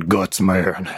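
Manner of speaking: put-on thick Southern accent. Quoting a guy in a Mega Man-themed first act; heavy southern accent. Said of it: "the guy with the heavy southern accent going".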